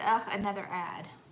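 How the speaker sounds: normal talking voice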